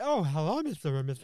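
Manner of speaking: put-on stoned, high-sounding speech. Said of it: "I was fucked everything mum spaghetti".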